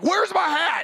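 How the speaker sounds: very high, loud yelling. Telling a story about their past self, retelling own yelling. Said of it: "I'm yelling".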